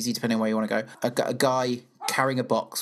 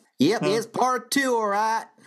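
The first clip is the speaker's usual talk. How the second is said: very high-pitched put-on Texan accent; 11 semitones higher, 3 dB louder than usual. A podcast host, asked by the co-host to do the texan, in a put-on texan accent. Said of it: "do your Texan 2".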